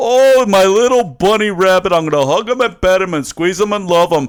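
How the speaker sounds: loud, high-pitched, doting, gushing cartoon monster voice. Retelling a cartoon scene, quoting the monster: abominable snowman voice. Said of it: "the abominable snowman grabs Daffy Duck and goes".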